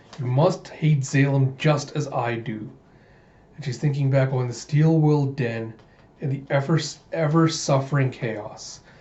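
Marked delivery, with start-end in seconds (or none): none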